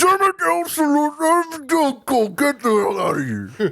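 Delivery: very high, very slow, swooping angry rant, acted. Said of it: "when [name] gets really mad at [name]".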